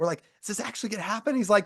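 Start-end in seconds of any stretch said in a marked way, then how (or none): 0.4-1.3 high, hushed, secretive whisper. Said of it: "we're whispering".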